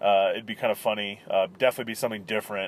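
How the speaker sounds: ordinary delivery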